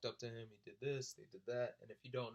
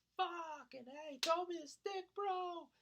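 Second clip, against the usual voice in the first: very high, stretched-out, drawn-out screaming; 4 dB louder than usual. Speaker retells yelling for someone to throw him a stick, retelling a scream. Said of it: "I'm screaming".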